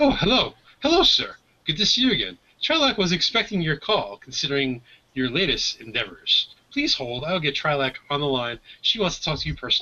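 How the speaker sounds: swooping protocol droid voice. Voicing a protocol droid answering a hologram call: protocol droid voice. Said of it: "the protocol droid comes on, on the hologram and goes".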